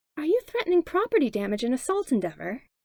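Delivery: sickeningly sweet, syrupy, sugar-coated tone. Narrator voices a woman confronting a man holding her door open: sickeningly sweet tone. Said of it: "tone sickeningly sweet".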